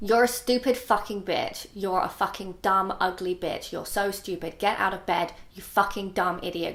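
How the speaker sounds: harsh, spiteful, contemptuous, mean berating voice. Impersonating a voice known not to be real, imitating a mean voice. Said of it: "just really mean".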